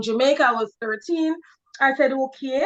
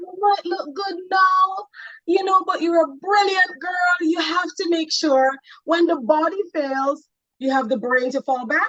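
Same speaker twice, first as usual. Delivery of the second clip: put-on Jamaican accent, pitched higher; 6 semitones higher than usual. Telling what her mom said to her, in her mom's jamaican accent. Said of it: "I always put on her Jamaican accent".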